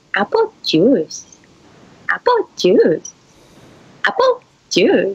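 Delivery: slow, calm, normal talking voice.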